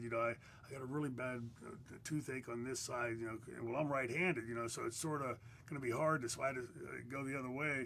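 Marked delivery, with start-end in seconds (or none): none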